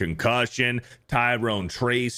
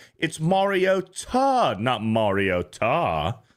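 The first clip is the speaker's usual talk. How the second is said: very slow, sing-song, swooping, drawn-out character voice; 2 semitones higher than usual. Speaker reading out a sender's pronunciation correction, in Hermione voice. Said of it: "in Hermione's voice".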